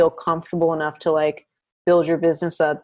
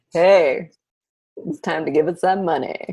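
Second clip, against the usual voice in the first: put-on voice, friendly. Acting out Uncle Sam again, asking for money: friendly Uncle Sam voice. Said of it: "If Uncle Sam sounded like you".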